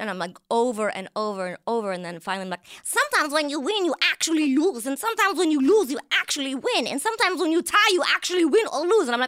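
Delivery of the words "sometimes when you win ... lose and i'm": very high, loud put-on voice. Retelling a line said over and over, in a Rosie Perez voice. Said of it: "oh, there she is. That's Rosie Perez".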